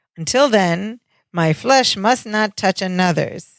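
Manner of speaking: ordinary delivery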